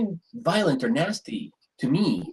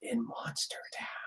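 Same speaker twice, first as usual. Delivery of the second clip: hushed, breathy, secretive whisper; 15 dB quieter than usual. Voicing a shopkeeper who names the town: whispering. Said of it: "and he whispers".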